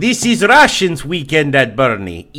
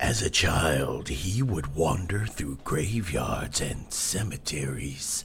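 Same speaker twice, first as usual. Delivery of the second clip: very deep, very soft, dramatic documentary narrator voice; 11 semitones lower, 14 dB quieter than usual. Mocking dramatic documentaries about the killer: super dramatic documentary narration. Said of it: "super dramatic".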